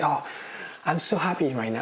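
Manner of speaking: put-on happy tone, plainly false and forced. Mimicking people after a breakup at dinner, imitating fake happiness. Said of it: "it's totally fake".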